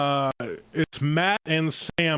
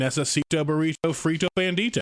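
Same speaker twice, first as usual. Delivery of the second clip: ordinary talk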